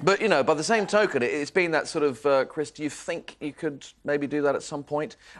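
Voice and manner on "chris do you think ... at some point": put-on mild, polite, gentle, almost sarcastic nagging. Retelling how she asks him to do things: imitating gentle nagging. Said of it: "that gentle nagging".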